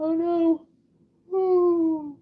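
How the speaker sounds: high, loud yawning through the words. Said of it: "my bad for yawning".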